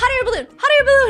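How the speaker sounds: mock thrilled, eager, very high excited shout. Retelling a couple's answer to the producers: imitating someone excited. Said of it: "so excited".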